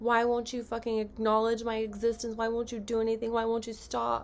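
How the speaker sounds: ordinary delivery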